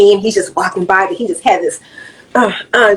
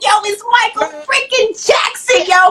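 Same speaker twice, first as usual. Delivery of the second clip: play-acted very high, thrilled kid's excited scream; 13 semitones higher than usual. Recalling seeing [name] as a little kid, retelling own childhood screaming. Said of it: "I'm screaming".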